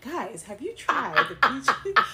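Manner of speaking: slow, smooth commercial ad-announcer voice. Mimicking the other host's question: imitating an ad voice. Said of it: "You sound like an ad".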